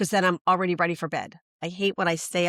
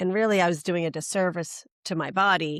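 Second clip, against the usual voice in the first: ordinary delivery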